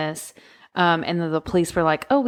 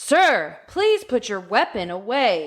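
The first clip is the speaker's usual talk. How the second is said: mock firm, steady tone; 3 semitones higher than usual. Retelling how someone told to ask firmly did it: mock-firm tone. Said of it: "Ask in a firm tone".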